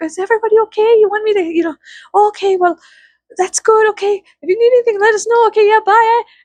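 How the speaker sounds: put-on very high, sweet Canadian accent. Retelling how friendly Canadians offered help, doing a Brother Bear moose voice. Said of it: "They sounded like the moose from Brother Bear".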